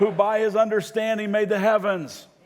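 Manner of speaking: loud, high, slow, earnest called-out delivery. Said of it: "You gotta say it like you mean it".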